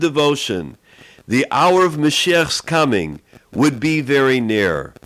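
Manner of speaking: usual speaking voice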